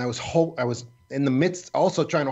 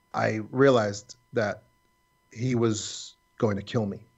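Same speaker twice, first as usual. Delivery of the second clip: normal talking voice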